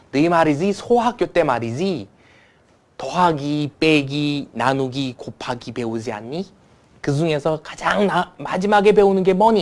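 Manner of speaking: put-on North Korean dialect, slow, loud, deliberate. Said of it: "북한 사투리를 이렇게 하시더라고요".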